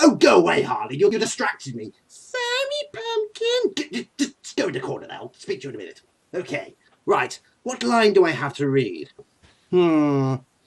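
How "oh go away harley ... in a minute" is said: over-the-top comic-book villain voice, high and swooping. Shooing away the other character: Joker voice. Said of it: "Mister J!".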